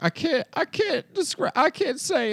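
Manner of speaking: play-acted tearful crying voice, very high, slow sobbing. Retelling a reality show scene where a man talks to producers: imitating someone crying. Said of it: "He's in the hotel room crying".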